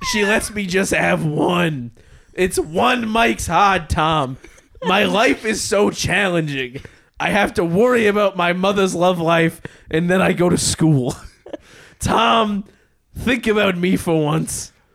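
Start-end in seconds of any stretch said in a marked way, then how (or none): 2.3-14.7 put-on fourteen-year-old voice. Acting out a teenager complaining to Tom in a comedy bit: put-on teenager voice. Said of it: "genuinely hurting my voice to do".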